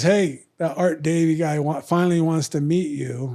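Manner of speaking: normal talking voice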